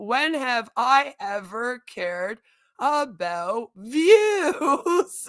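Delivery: very slow speech through laughter. Retelling own reply to a commenter: retelling a laughing reply. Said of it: "laughed my ass off and said".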